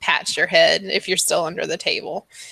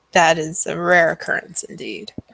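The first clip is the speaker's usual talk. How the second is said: little wry, sarcastic, mocking giggle. Voicing a fortune teller answering players about Strahd: sarcastic giggling. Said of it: "a little sarcastic giggle".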